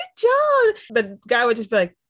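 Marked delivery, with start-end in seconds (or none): 0.0-0.8 very high, gushing, thrilled, excited voice. Showing how a dog handler is supposed to give praise: excited praise. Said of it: "you're supposed to get all excited".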